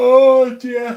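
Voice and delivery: spoken through a loud, very high-pitched yawn. Talking to listening friends, the speaker apologises for yawning: yawning. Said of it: "Excuse me for yawning in your ears".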